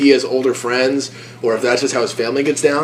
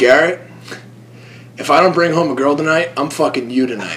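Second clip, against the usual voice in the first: dead serious, flat deadpan delivery. Telling a story, speaker quotes one man's reply to another, retelling a deadpan reply. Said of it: "Matt just looks at him deadpan and says".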